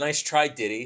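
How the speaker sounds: ordinary talk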